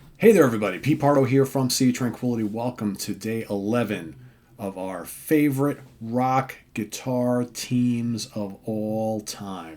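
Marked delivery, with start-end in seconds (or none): 2.4-9.8 very slow, careful, word-by-word delivery. Host welcoming viewers to a video series, saying it very slowly. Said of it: "The reason why I said that so slow".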